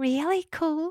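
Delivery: whispering. Macy answers Steve as she crawls toward the pelicans: whispered. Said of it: "whispered Macy".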